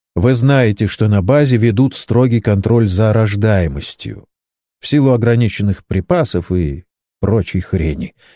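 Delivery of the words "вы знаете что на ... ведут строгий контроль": usual speaking voice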